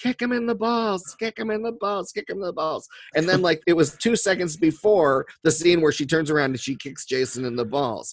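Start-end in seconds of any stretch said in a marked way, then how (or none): 0.0-2.9 put-on high, rowdy screaming. Retelling how an audience member yelled at the screen: imitating someone screaming. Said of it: "somebody started screaming".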